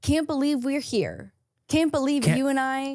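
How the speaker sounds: flat deadpan, dead serious, no irony at all. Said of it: "deadpan, so serious".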